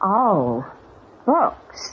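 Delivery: disappointed, let-down, dashed-sounding voice. Drama scene, reacting to Mr. Hewlett saying his business is books: disappointed. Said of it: "You sound disappointed".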